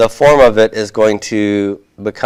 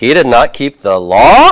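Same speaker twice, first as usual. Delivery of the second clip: pitch climbs at the end on "law"; 4 semitones higher, 4 dB louder than usual. Asking a yes-no question by keeping the statement: pitch rising at end on law. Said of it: "have a rising intonation at the end".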